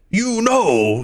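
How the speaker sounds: very high, very loud, booming exclamation. Voicing a character answering a whispered secret: very loud in character. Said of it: "he says very loudly".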